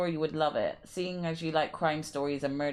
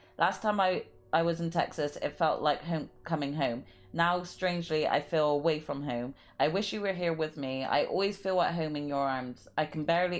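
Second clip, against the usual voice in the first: ordinary talk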